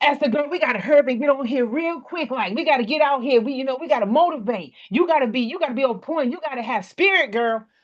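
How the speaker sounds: frantic, crazy over-excited, worked-up, hurried voice. Acting out what the speaker might say to Esther, getting all crazy. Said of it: "Me getting all crazy in front of you".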